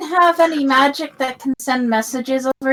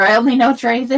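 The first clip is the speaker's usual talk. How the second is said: ordinary delivery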